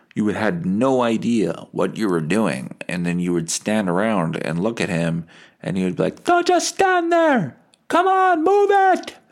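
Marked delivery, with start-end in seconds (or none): 6.2-9.1 very high, impatient, loud yelling. Retelling a father's orders at work: imitating dad yelling. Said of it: "What are you yelling for?".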